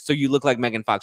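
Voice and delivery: ordinary talk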